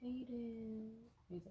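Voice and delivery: soft, hurt tone. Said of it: "she got this tone in her voice".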